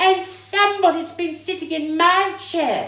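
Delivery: shrill, squeaky, loud little voice. Reading the Three Bears story aloud, voicing the baby bear: Baby Bear's shrill little voice. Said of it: "squeaked the baby bear in his shrill little voice".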